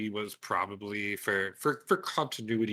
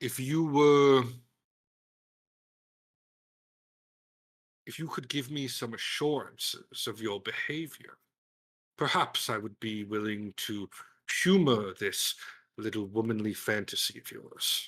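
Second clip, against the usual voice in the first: threatening, menacing tone. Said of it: "he says with kind of, like, a threat".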